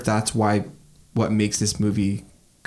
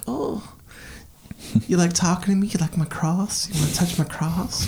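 creepy, higher-pitched preacher voice; 9 semitones higher than usual. Retelling a film scene, imitating a creepy pastor talking to a kid: imitating a creepy pastor. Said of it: "That guy's a fucking creep".

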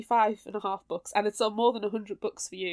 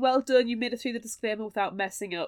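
ordinary delivery

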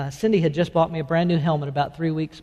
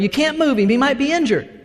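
shrill, high-pitched yelling; 10 semitones higher, 5 dB louder than usual. Retelling a motorcycle crash, quoting other bystanders: imitating people yelling. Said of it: "other people yelling".

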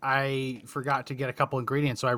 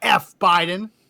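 much louder, high-pitched loud outburst; 5 semitones higher, 4 dB louder than usual. Retelling her second outburst after he told her to let it out: retelling a much louder curse. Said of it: "a much louder".

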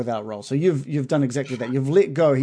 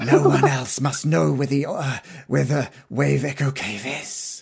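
bad, terrible put-on female character voice. Narrating a game, voicing the drow who speaks to Bill, bad female character voice. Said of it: "That was a terrible voice too".

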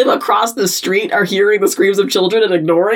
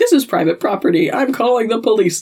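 ordinary talk

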